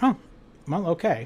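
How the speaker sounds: ordinary talk, nothing marked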